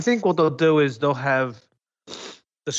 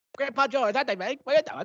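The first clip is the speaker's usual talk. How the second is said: put-on Canadian cartoon voice, higher; 11 semitones higher, 3 dB quieter than usual. Joking with the others about fast internet: Terrance and Phillip voice. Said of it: "you sounded like the idiots from South Park from Canada".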